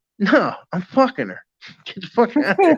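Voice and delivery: high voice with swooping pitch. Retelling a brother turning a man away at a party: imitating brother Bernie. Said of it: "it's exactly how he said it".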